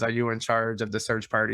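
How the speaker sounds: ordinary talk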